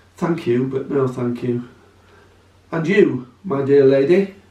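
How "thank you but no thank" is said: plain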